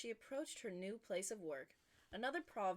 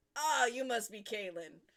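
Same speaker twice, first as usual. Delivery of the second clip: put-on booming male voice, louder; 2 semitones higher, 10 dB louder than usual. Reading a story aloud, voicing the new boss: booming man's voice. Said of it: "I definitely know how to sound like a booming man".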